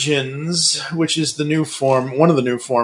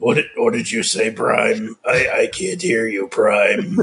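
acted robotic villain voice. Demonstrating the voice, calling out to Prime, in a Megatron voice. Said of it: "me to talk like this".

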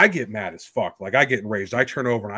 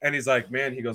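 usual speaking voice

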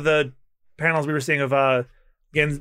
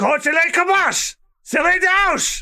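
shrill, very high, slow fake French yell; 14 semitones higher, 4 dB louder than usual. Recapping a fight where a character beats his foe, retelling yelling in fake french. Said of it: "while yelling in French".

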